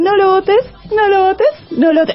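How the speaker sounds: punk protest-style singing, high pitched.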